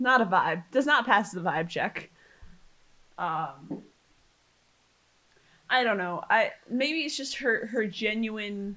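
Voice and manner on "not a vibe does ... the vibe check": plain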